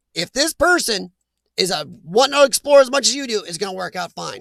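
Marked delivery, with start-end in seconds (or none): none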